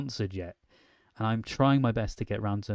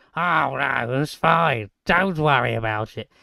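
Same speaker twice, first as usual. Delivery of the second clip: very loud, slow, put-on children's puppet voice; 4 semitones higher, 9 dB louder than usual. Joking around, the speaker does a put-on puppet character voice. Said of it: "I always do impressions of uh, Zippy and Bungle. Was it Zippy and George? So I go".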